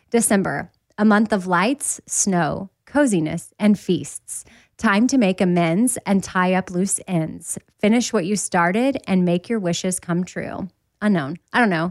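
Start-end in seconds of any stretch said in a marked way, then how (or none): none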